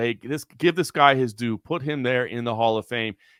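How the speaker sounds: plain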